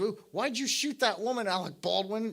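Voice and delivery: put-on, high, haranguing, accusing, berating voice. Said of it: "She's bitching him out".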